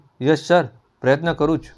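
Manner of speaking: ordinary delivery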